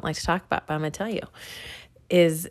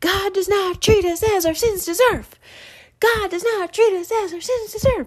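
play-acted very high, loud hollering; 5 dB louder than usual. Retelling a scene where he yells out the window, acting out a shout. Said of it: "he's yelling out the window".

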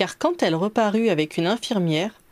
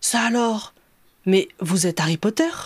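sudden cry, caught off guard. A man in a dressing gown in the corridor calls out to Harry: exclaiming.

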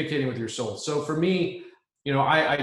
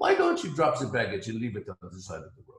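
put-on thick French accent throughout, swooping pitch; 3 semitones lower, 3 dB quieter than usual. Quoting what a french guy once said: heavy french accent. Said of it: "And I have very, very heavy French accent".

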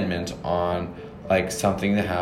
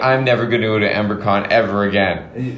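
usual speaking voice

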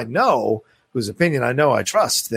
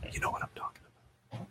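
soft, breathy ASMR whisper. Addressing a viewer who tweets at them: asmr voice. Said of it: "This is my ASMR voice".

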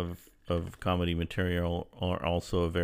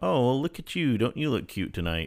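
put-on condescending late-night host voice, pitched up; 6 semitones higher than usual. Criticising how talk-show hosts spoke to women in comedy: mock-condescending talk-show host. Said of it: "that condescending phrases and tones".

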